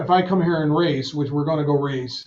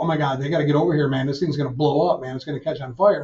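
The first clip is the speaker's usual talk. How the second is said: put-on panicked delivery. Retelling panicked words at a crashed race car: retelling own panicked words. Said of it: "I'm panicking".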